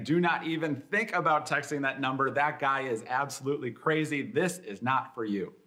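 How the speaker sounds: usual speaking voice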